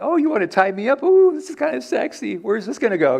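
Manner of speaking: spellbound, dazzled, slightly high-pitched musing. Imagining how Samson answers Delilah's question: acting out Samson. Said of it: "I can imagine, he's like".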